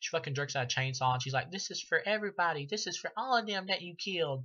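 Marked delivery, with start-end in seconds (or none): 1.5-4.4 stilted, badly acted movie-style delivery, pitched up. Imitating an actress's line from a film: imitating atrocious acting. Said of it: "that's exactly the way she sounds".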